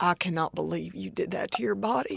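put-on very quiet, hushed Texas accent. Speaker retelling what mom said when she saw it at the gas station: texas mother voice. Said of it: "she is the voice of a Texas mother".

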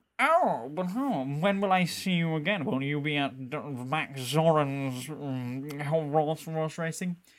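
slow, lingering, drawn-out "um". Retelling a scene from A View to a Kill: imitating Bond. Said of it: "And he's like".

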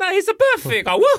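very high, loud character-voice whoop.

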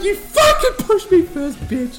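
laughing, high-pitched, slow yelled protest.

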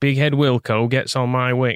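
put-on Nottingham accent, football manager style. Trying the impression again in a Nottingham accent: Brian Clough impression with Nottingham accent. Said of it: "Nottingham, like this".

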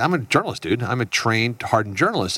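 plain

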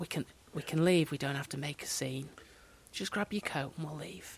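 hushed, quiet, discreet half-whispered murmur. Retelling a detective's words to a suspect: imitating a detective half-whispering. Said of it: "quietly and rather in hushed tones and whispers went".

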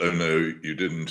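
ordinary talk, nothing marked

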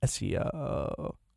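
low, creaky voice with vocal fry. Explaining the term vocal fry by demonstrating it: creaky vocal fry. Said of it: "It's where you go".

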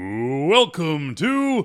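fight announcer style. Asked to open Cellmates like a boxing announcer, boxing ring announcer voice. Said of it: "Can you do the let's get ready to rumble".

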